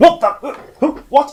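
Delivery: high, loud, shrill, terrified cries. Voicing a guard who spins around looking terrified: terrified NPC voice. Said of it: "just looking terrified".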